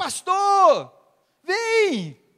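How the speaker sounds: very high, swooping, loud shout with "vem" drawn out. A pastor retells a man calling to him from a brothel, imitating Marcão shouting. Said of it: "ele começa a gritar".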